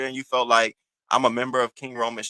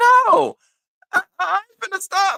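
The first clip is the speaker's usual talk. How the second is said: mock dead-serious, very high-pitched, loud voice; 6 dB louder than usual. Retelling a caller's reply to a plea to stop: imitating someone serious. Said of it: "and she was serious".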